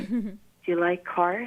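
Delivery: slow, clumsy put-on Swedish accent. Speaker retelling the only question they asked him, in a really bad swedish accent. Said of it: "in really bad Swedish accent too".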